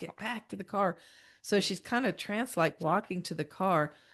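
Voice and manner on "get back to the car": acted, loud scream or yell. Telling a story about a badly sunburned girl, retelling a loud scream. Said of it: "Vicky screams real loud".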